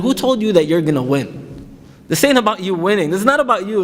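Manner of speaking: ordinary talk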